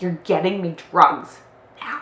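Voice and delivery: insistent, loud and slowed down.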